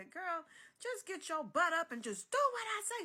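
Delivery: shrill, very high-pitched hollering. Retelling her sister telling her to get up, imitating sister hollering. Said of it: "She started hollering at me".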